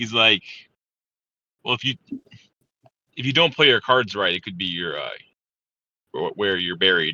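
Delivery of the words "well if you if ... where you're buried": self-assured, cocky, slightly arrogant tone. Voicing a character aiming a pipe rifle at a player: arrogant. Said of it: "he's a little arrogant about it".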